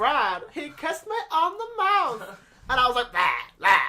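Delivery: shrill, loud, squealing, swooping cartoon voice. Urged to do their LSP voice for the group: Lumpy Space Princess voice. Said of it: "Don't just do your L S P voice. Go on".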